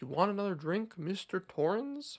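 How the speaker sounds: eerie, creepy, ominous bartender voice with seeping malice. Retelling how the bartender stares and asks: creepy ominous Lloyd voice. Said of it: "he's so creepy and eerie and ominous".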